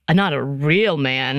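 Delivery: put-on sarcasm, low and drawn-out. Describing articles that say soup eaters are not manly: sarcastic. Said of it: "I'm putting that in quotes and sarcastically".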